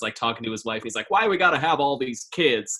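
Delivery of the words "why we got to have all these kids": put-on cranked-up angry yell, high and loud. Imitating a movie character who yells at his kids: imitating George Bailey yelling. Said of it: "That's very good".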